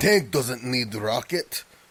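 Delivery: put-on Russian accent. Quoting a Russian scientist character with an accent: imitating Granin's Russian accent. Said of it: "I'm projecting because I think he should have an accent".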